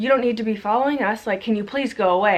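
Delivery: furious, really mad yelling. Recounting yelling at a man who followed and cursed at her; retelling her angry yell. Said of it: "And I was yelling because I was really mad".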